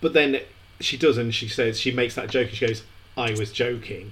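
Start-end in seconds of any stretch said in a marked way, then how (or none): 3.2-4.1 mock bone-dry deadpan with zero inflection. Retelling what a woman said right after making a joke, retelling a deadpan line. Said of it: "in that deadpan way".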